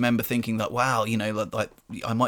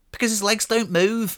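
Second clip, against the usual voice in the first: very high put-on Scouse accent; 10 semitones higher, 4 dB louder than usual. Retelling a woman overheard answering her toddler, the speaker imitates a Liverpool accent. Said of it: "especially in the accent".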